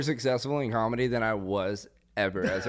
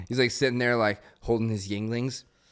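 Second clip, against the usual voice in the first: normal talking voice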